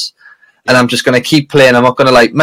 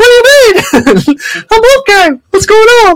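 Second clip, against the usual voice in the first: very high, swooping, squeaky cartoon mouse voice; 4 dB louder than usual. Retelling how Wolfgang answered when told to stop, in Wolfgang's Mickey Mouse-like voice. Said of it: "Wolfgang's voice was like Mickey Mouse".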